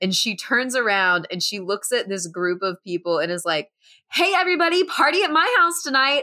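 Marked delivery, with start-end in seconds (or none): 4.1-6.2 mock very high, giddy, euphoric, overexcited announcement. Retelling a movie scene where Abby invites everyone to a party: imitating Abby, overexcited. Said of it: "She is on this high of her birthday candle wishes".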